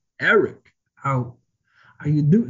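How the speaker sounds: dragged out, weird pauses, off cadence, poorly done. Trying a requested impression with weird pauses: bad Christopher Walken impression. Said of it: "I'll try, uh, but it's not good".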